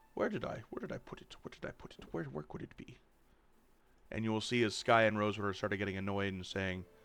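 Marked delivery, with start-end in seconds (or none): 0.1-2.9 put-on old owl voice mumbling and muttering under breath. Voicing a giant owl searching the room: owl mumbling under his breath. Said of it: "he mumbles under his breath".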